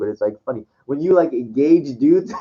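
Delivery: words broken up by laughter while talking. Speaker apologizes for laughing mid-explanation, laughing while talking. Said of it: "I'm sorry I'm laughing".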